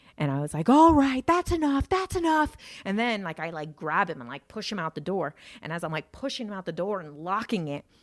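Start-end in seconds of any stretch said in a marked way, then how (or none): 0.7-2.6 mock shrill, very high, heated yell. Retelling a big argument, yelling back at him, retelling a yell. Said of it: "I start yelling at him back".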